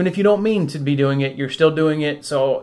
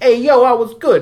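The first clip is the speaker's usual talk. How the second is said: bad put-on New York accent, loud and high; 9 semitones higher, 7 dB louder than usual. Trying out different versions of an impression of Claire, Claire impression, New York accent. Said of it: "That's from like New York".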